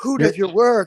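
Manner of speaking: put-on gasping in awe.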